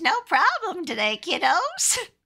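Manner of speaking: put-on old granny voice. Volunteering to do the granny voice for the others, old granny voice. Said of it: "I can do the granny voice".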